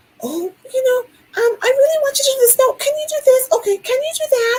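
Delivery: put-on very high, babyish little voice. Imitating how some people ask for things, in a high-pitched little baby voice. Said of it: "they speak in a very high inflection and maybe a little baby voice".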